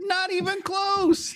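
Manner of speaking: very high-pitched character voice. Retelling someone's reply to being asked if he is finished, in a Wallace Shawn impression. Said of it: "That was a really good Wallace Shawn impression".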